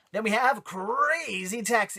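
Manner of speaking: high, slow, failed game-announcer voice. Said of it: "I can't do that voice".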